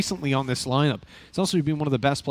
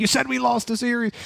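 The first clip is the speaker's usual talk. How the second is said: very high, rough, accusing shout; 9 semitones higher than usual. Retelling how people would come in arguing: imitating someone shouting. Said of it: "shouting at me saying".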